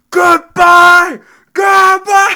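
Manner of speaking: shrill, very loud, high-pitched screaming. Remembering friends parting in the street at night: re-enacting screamed goodbyes. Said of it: "we'd all scream goodbye".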